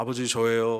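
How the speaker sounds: thick, heavy, thickened voice. Acting out someone faking a voice to deceive, thick, hunter-like voice. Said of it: "이렇게 좀 두껍게 사냥하는 사람답게".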